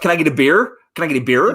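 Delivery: put-on American accent, rolled R. Speaker retells ordering a beer at a bar to be understood; put-on american accent, rolled r. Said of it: "And roll the R".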